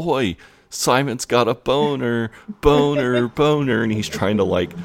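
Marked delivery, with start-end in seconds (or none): 0.0-2.3 high-pitched yell with words stretched out. Retelling a boy jumping up on his chair to call out another boy, retelling a yell. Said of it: "he just starts yelling".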